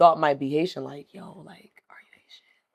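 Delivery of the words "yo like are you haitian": secretive, hushed, breathy whisper. Retelling asking another student at school if they were Haitian: imitating a whisper. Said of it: "you literally had to whisper to another student".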